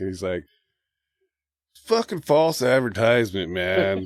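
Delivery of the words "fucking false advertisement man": put-on obnoxious drunk talking very slow, drawn-out drawl. Retelling what a drunk man said after a show, imitating Spicoli-slow drunk talk. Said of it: "he's all talking real slow, like Spicoli slow".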